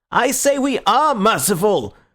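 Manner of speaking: slow, high, furious, insistent repetition. Reading a story aloud, a speaker repeats his claim over protest: furious. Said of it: "repeated Gregory furiously".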